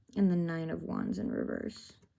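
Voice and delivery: normal talking voice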